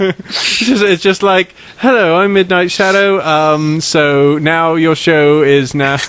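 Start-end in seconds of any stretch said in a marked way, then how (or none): 1.8-3.2 put-on posh British accent. Explaining what a British character does to an American show, Midnight Shadow British voice. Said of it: "Midnight Shadow is terribly British".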